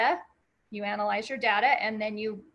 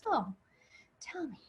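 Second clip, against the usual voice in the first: pleasant, soft, even-toned, calm voice; 4 semitones higher, 9 dB quieter than usual. Describing the torture scene in The Princess Bride, quoting the torturer: mock nice, calm voice. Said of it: "in this nice, calm voice says".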